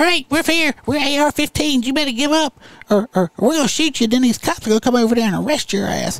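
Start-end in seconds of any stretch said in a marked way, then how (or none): 0.0-4.1 put-on squeaky voice, spoken slower. Telling a story, voicing the rifles as they arrive: squeaky little AR-15 voice. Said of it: "That's how I figure AR-15 would sound like, a little squeaky".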